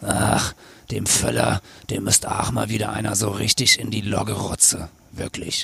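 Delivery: soft, husky, smoky woman's voice. Retelling a woman's remark while gossiping about the national team: smoky woman's voice. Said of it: "schön rauchige Stimme".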